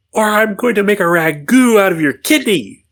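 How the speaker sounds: very high, mock menacing, intimidating tone. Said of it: "Trying to intimidate him".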